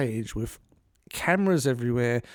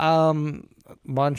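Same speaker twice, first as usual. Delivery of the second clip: ordinary delivery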